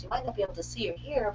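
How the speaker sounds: hushed, very soft, nice soothing announcer voice. Speaker mocks a medicine ad announcer listing side effects, mock soothing announcer voice. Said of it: "like very nice soothing voice".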